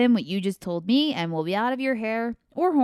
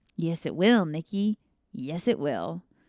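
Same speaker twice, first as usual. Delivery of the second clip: low, slow, menacing, ominous rasping voice; 5 semitones lower, 3 dB quieter than usual. Reading a story, an unseen voice speaks to Nick in the dark: ominous rasping voice. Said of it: "an ominous voice rasped".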